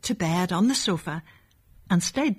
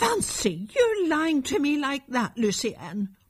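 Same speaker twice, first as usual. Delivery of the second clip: high, angry, reproachful cry; 7 semitones higher than usual. A mother scolds her son for lying to her, crying out angrily. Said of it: "cried his mother angrily".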